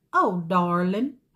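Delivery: rough, loud attempt at Louisiana Creole accent. Retelling a volunteer greeting the speaker on arrival, attempted Louisiana Creole accent. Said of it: "but it's this Louisiana Creole".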